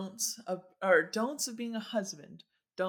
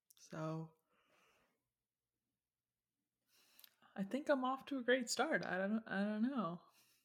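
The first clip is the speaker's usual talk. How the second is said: quieter speech through a yawn; 3 semitones higher, 6 dB quieter than usual. Answering the other speaker's question, yawning while talking. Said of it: "Sorry for giving you my yawn".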